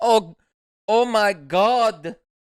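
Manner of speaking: loud, slow, put-on Russian accent. Quoting the woman in the shark video, imitating a Russian accent. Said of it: "in like a Russian accent".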